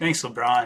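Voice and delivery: sarcastic tone. Reacting to talk that a player may leave next season: sarcastic. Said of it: "I know I'm saying it sarcastically".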